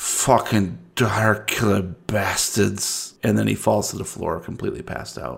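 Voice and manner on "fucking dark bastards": barely audible, slurred mumble under the breath. A man losing consciousness mutters before falling to the floor, mumbled under his breath. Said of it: "He mumbles under his breath".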